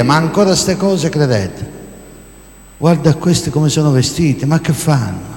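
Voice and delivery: ordinary talk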